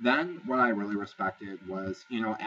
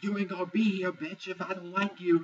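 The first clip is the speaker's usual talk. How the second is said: imitated screaming, higher pitch; 9 semitones higher than usual. Retelling a reality-show fight from a bench: imitating someone screaming. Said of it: "Lauren starts screaming at her".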